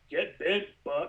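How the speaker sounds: mechanical robot-style voice. Showing how the robot Tweaky talks, Tweaky robot voice. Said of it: "he goes, he goes".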